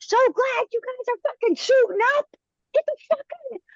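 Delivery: mock very high, frantic top-of-the-lungs scream. Recounting teammates dicking around, the speaker re-enacts screaming at the top of their lungs. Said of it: "screaming at the top of my lungs".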